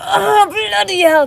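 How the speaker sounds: very loud, shrill, high, straining grunt. Imitating how some people say the exclamation: strained, grunting voice. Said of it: "like they're doing a poo at the same time with that kind of tone of voice".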